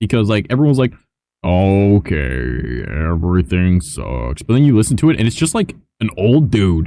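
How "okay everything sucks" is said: deep, dropped character voice. Showing how everyone does Eeyore's voice: Eeyore voice. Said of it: "Eeyore's voice".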